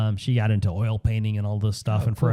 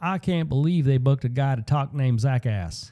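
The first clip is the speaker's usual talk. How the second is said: put-on South Carolina Southern US accent; 4 semitones higher than usual. Retelling what a friend in South Carolina said about a booked speaker, in a Southern accent. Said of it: "he has a Southern accent".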